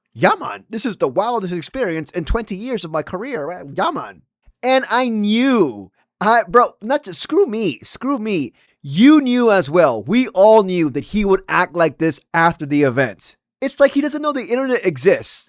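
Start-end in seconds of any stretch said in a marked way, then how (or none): 0.2-4.2 sounding completely amazed and in awe. Mocking how Joe Rogan described the event: imitating Joe Rogan in awe. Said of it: "He also said".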